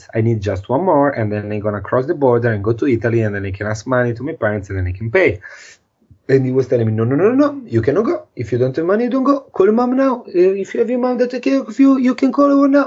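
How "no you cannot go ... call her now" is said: put-on strong, high-pitched French accent. Speaker quotes a man who refused to let them go, strong french accent. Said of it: "He had this super strong French accent".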